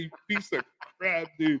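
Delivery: mad, exasperated outburst, soft and high. Recalling throwing a wireless mic at the wall, retelling an angry outburst. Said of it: "I was so mad".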